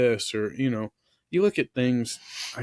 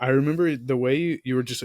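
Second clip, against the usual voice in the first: ordinary delivery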